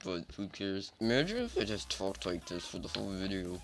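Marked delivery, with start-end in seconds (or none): 1.0-3.6 spoken through clenched teeth, jaw held shut. Imagining talking this way for the whole video, spoken through clenched teeth. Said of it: "I'm not even bringing my teeth apart".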